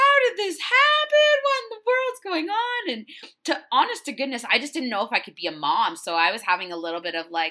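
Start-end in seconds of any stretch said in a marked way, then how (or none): 0.0-2.9 very high, loud bawling cry. Retelling a phone call about a picture, retelling past bawling. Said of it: "I'm like bawling my absolute face off".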